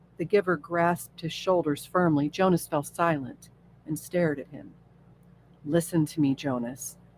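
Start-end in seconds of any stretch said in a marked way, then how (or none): none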